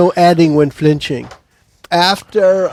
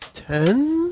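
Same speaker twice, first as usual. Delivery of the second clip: put-on voice climbing unsurely like a teenager, rising; 11 semitones higher, 7 dB quieter than usual. Player giving the damage for a melee attack, not sure of it; unsure rising question. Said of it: "with a voice raising like a teenage girl who's not sure of herself".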